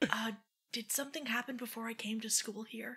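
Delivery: quiet, hushed whisper. Asking another character quietly about the past: whispering. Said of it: "I'm gonna whisper".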